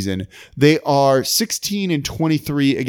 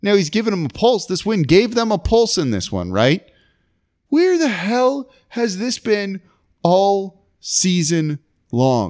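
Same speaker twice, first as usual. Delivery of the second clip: exasperated ranting voice, frustrated, almost mad, pitched up; 5 semitones higher than usual. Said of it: "You can hear it in my voice".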